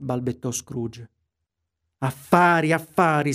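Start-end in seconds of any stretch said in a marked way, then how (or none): 2.0-3.3 shrieking ghost voice. The ghost, after Scrooge stammers a remark, shrieks back at him. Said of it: "strillò il fantasma".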